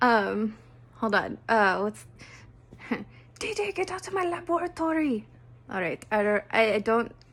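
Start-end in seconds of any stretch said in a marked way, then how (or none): 3.7-5.3 very high-pitched put-on cartoon boy voice. Trying out a voice that sounds like it, the speaker does a Dexter impression. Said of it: "kind of sounds like De Dexter from Dexter's Laboratory".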